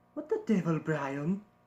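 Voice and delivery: put-on cartoon character voice. Practicing a catchphrase the character is known for, doing a Stewie impression. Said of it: "I feel like it's getting better now".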